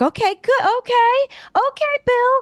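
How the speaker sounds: high, nervous, hopeful cheering. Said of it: "I was like".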